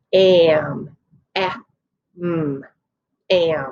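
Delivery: am, eh, mm, am stretched out very slowly. Showing learners how to sound out a word: stretching the sounds out. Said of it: "So let's stretch those sounds out".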